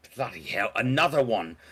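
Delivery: exasperated, fed-up grumble. Narrator voices the doc when visitors knock on his door, exasperated. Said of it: "slams down his case and just is like".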